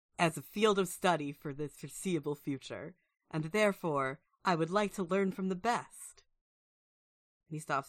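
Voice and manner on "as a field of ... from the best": put-on voice, young-sounding and formal. Voicing an applicant in a video asking to attend the school: voicing Garion. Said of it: "he says".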